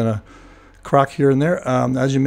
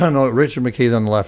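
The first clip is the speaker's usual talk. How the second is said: quick, firm, confident delivery. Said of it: "yes, in his Audi".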